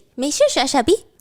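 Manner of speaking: cute-sounding delivery. Retelling how someone taught a phrase, saying it cutely. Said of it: "Say it like that, cutely".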